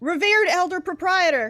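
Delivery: very high, ringing, carrying shout. A character walks to the bar and addresses the proprietor, shouting.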